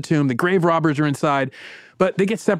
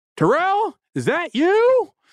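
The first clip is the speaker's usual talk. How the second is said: very high, swooping, loud yell; 13 semitones higher than usual. Narrating a gunfight; a man calls to Agent Terrell, yelling back from the darkness. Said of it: "yells back from the darkness".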